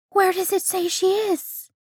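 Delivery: very high, out-of-breath, breathless voice. Jack to Edward, who is pressing buttons on a device: asked breathlessly. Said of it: "Jack asked breathlessly".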